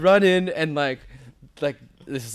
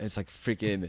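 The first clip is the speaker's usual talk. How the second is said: ordinary delivery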